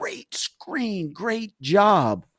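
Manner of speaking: all-out yell at top of lungs, high, drawn out. Recounting being pumped up with the kids, retelling own loudest yell. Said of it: "in about the loudest voice I have, I yell".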